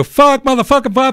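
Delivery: play-acted very high, loud, screaming angry yell. Recounting a man screaming at them, retelling Michael's angry yell. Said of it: "he's yelling, you know, screaming at me".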